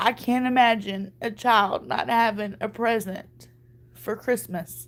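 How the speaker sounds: close to crying, holding it together. Asking the audience for help with a child's Christmas, on the verge of tears. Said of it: "I'm about to cry now".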